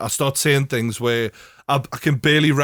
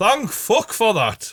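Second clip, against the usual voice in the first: high, drawn-out, annoyed, put-on shout; 7 semitones higher than usual. Retelling the moment the plane was told to land: imitating own shout. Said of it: "Is that what you shout whenever you land?".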